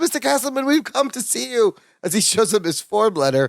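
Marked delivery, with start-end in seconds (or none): 0.0-1.7 high-pitched, eager voice. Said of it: "Balki goes".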